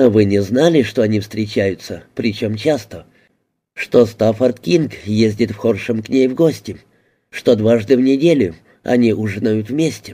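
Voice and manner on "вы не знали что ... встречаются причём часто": ordinary delivery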